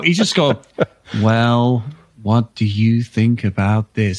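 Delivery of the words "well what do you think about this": put-on voice, low and level. Doing an impression of a celebrity in a group chat: Jeff Goldblum impression. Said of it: "I'm doing an impression of him now".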